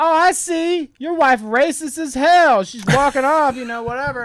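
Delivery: very loud, high-pitched, top-of-the-lungs holler. Retelling what a guy shouted about his wife, imitating someone yelling. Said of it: "dude yells like at the top of his lungs".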